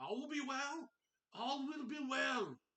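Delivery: piercing, very high, loud scream. Narrating a scene in the rain, the speaker voices a character running up screaming. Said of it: "as he's running up screaming".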